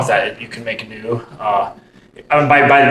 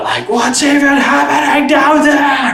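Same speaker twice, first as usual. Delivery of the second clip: mock yell, much higher; 4 dB louder than usual. A speaker recounts a woman in the room next door yelling, imitating someone yelling. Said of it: "she's just yelling uh".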